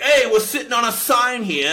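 very high-pitched, terrible put-on Boston accent. Retelling a commercial line spoken by a woman: bad Boston accent. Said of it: "this dog shit Boston accent".

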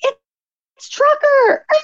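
very high, slow, drawn-out delight. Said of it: "one of the drivers looks and he's like".

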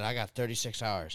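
ordinary delivery

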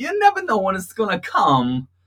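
very high, loud voice with swooping pitch. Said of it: "not a bad Christopher Walken".

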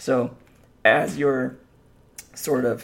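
voice breaking, cracking mid-phrase. Podcast host explaining the podcast flair to listeners, voice cracking. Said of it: "sorry, my voice cracked".

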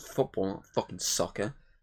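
annoyed. In a back-and-forth with the other speaker, grumpy. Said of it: "I'm grumpy right now".

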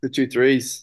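Australian-accented speech. Saying a phrase after being asked to do it for the others: australian accent. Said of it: "do it in an Australian accent for us".

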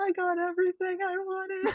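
high, play-acted, near-tearful voice. Retelling own words leaving the theater after the premiere: imitating own near-tearful voice. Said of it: "I sound like I'm about to cry".

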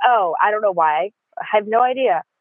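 mock sarcastic tone with feigned, playing-dumb cluelessness. Retelling own reply about why making friends was hard: imitating own sarcastic reply. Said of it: "Being sarcastic".

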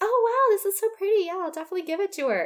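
very high-pitched character voice. Recounting a scene, quoting what Jenny says, in a Jenny impression. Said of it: "I love your Jenny impression".

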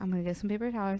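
very soft, hushed, close half-whisper. Retelling own words half-whispered into his ear: retelling own half-whisper. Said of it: "I whispered in his ear".

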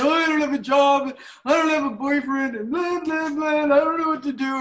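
loud, high-pitched blubbering sobs, snotty and tearful. Retelling arriving at a sponsor's house, imitating her own crying. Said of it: "I get over there and I'm crying and I'm like".

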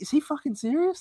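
high, soft, incredulous, disbelieving inner voice.

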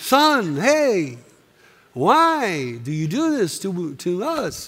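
put-on slow light Yiddish-inflected accent.

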